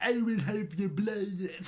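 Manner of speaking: clumsy, high-pitched, put-on vampire voice. Explaining the word suck, the speaker acts out a vampire, in a vampire voice. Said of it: "I'm trying to do the vampire".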